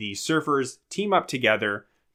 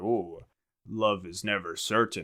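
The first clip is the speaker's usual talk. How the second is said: goofy put-on voice, low and soft; 4 semitones lower, 6 dB quieter than usual. Describing how Tanner acts goofy, the speaker mimics his put-on low voice. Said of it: "puts on a, a low voice and he's like".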